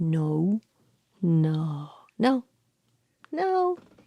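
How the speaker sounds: very slow, sassy, drawn-out "no"s. Showing how everything gets answered with no: mimicking sassy talk-back no. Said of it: "sassy, like a little bit of talk back... has different intonations".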